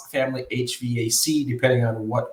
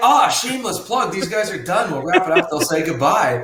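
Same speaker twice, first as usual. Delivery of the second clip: high-pitched, mock put-on voice. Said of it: "You're like".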